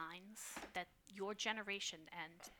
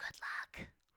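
hushed, soft, quiet whispering. Voicing a character who watches the others go: quiet whisper. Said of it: "she just quietly just whispers".

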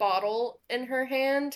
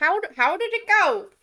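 nervous creature voice, much higher; 8 semitones higher, 4 dB louder than usual. Narrating to the players, voicing the bullywug who escorts them out: nervous bullywug voice. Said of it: "a nervous bullywug who goes".

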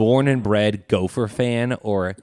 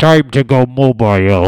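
put-on villain voice; 9 dB louder than usual. Asked to do a Bane impression over the microphone: Bane impression. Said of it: "can you do your best Bane impression".

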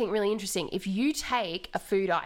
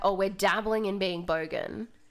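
usual speaking voice

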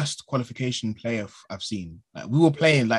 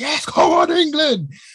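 very high, loud, stretched-out screaming cheer; 6 dB louder than usual. Retelling jumping up at a goal in the living room: imitating own screaming. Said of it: "I jumped up and I was screaming".

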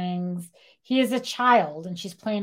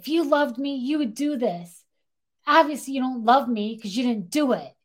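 put-on, pitched-up, heated, accusing angry tirade; 6 semitones higher than usual. Retelling how a woman went off on Billy, mock-yelling angrily. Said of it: "she's yelling at him and she's like".

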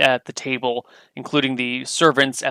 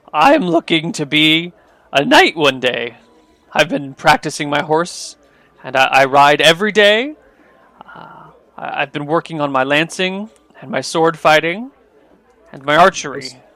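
voice breaking and cracking mid-sentence; 3 semitones higher, 4 dB louder than usual. A game master voices the son replying to you, voice cracking. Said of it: "His voice breaks while he speaks".

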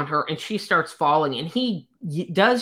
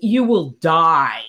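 loud screaming, shouted; 4 dB louder than usual. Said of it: "He's screaming so loud that".

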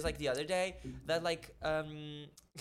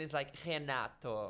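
sweet Brazilian Portuguese accent; 3 semitones lower than usual. Saying her own name the way Brazilian people say it, Brazilian Portuguese pronunciation. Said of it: "In Brazilian".

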